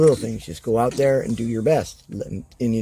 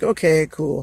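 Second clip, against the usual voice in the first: put-on mellow, chill tone, much higher; 4 semitones higher than usual. Describing a nice wrestler backstage, imitating a mellow, chill tone. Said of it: "Real mellow, real chill".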